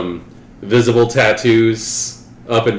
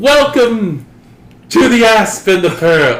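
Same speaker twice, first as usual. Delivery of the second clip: put-on overwhelmingly heavy British accent, very high and loud; 11 semitones higher, 5 dB louder than usual. Retelling how a man turned around and welcomed them: overwhelmingly British accent. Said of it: "in this like overwhelmingly British accent".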